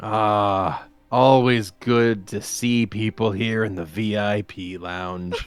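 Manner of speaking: very low, resonant, slow, drawn-out voice. Voicing a newcomer greeting people in the VIP lounge: very low, reverberating voice. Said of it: "he speaks with a, a very low and reverberating voice".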